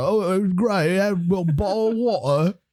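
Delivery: mocking put-on British accent. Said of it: "when she moved to London, she's like".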